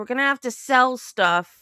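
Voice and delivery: put-on angry, mad scolding outburst. Retelling what a stepmom said to a boy: imitating someone angry. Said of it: "she got all mad at him and said".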